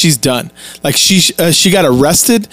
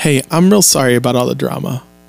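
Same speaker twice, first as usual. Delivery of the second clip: put-on, changed, lower woman's voice; 4 semitones lower than usual. Retelling what she said after the door opened: imitating Aisha's changed voice. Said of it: "her voice changes one hundred percent and goes".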